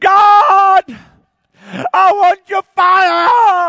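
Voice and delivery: top-of-the-lungs, full-volume high shout, very slow, drawn out. A pentecostal showing how he prays, shouting at the top of his voice. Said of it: "I'm shouting at the top of my voice".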